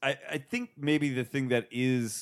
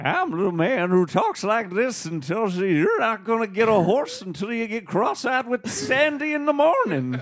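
high, loud, drawn-out put-on Old West cowboy voice; 9 semitones higher, 5 dB louder than usual. Describing a stock character from Westerns: put-on Old West voice. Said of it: "Why did people talk like that in the Old West?".

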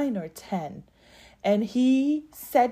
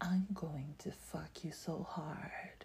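slow, breathy whisper, very close in; 5 semitones lower, 17 dB quieter than usual. Retelling what a man said to her a second time, imitating someone whispering. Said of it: "he's whispering to my ears".

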